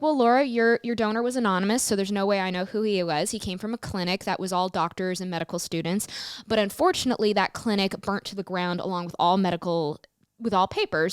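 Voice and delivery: ordinary talk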